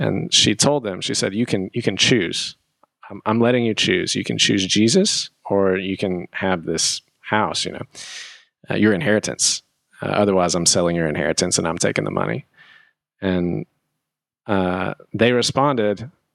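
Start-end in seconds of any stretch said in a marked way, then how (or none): none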